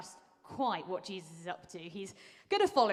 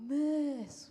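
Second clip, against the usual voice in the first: put-on accent of Somerset; 7 semitones higher than usual. A teacher acts out school students a bit annoyed at her, in a put-on Somerset accent. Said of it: "like in that nice Somerset accent".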